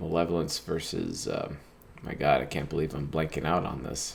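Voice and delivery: worn-out, tired zombie-like voice. Speaker teaching on five hours of sleep blanks on a word, tired, zombie-like voice. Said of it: "I kind of sound like a zombie".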